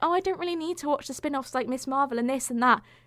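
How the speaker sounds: high, mocking put-on voice. Imitating most people's view of the Marvel spin-offs, in a mocking voice. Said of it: "Love the mocking voice".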